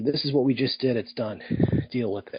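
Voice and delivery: ordinary talk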